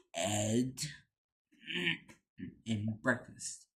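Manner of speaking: play-acted, most menacing voice possible. Quoting a favorite line, imitating Todd's menacing voice. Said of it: "in the most menacing voice ever".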